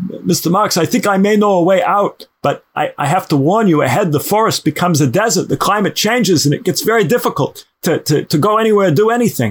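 put-on thick Brooklyn accent. Telling a story, voicing a man who offers a way out of a forest, thick Brooklyn accent. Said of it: "the man with the thick Brooklyn accent goes".

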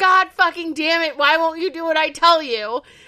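high, fed-up, frustrated half-scream of exasperation. Retelling a frustrated villain trapped inside someone: imitating Brainiac screaming.

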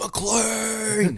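very high shrill scream, word stretched long. Reviewing a movie, quoting its star's line: imitating Samuel L. Jackson screaming. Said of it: "Samuel L. Jackson is screaming".

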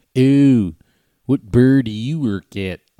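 put-on Baltimore local's accent. Asked about the Baltimore accent, the speaker tries it out, in a Baltimore accent. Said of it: "the Baltimore accent?".

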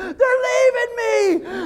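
mock, shrill, very high-pitched screaming cry. Retelling the moment the waves carried Sage from the boat: retelling a scream. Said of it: "I started screaming".

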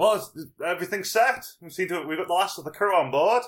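high, loud shouted call. Voicing a character who yells to the crew: Jim yelling to the crew. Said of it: "he yells to the crew".

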